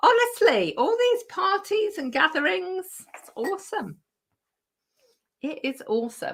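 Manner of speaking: hoarse croaking voice. Reading out messages, the speaker talks in a croaky voice. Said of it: "my voice is going croaky again now".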